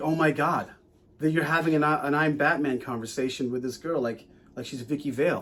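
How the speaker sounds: ordinary talk, nothing marked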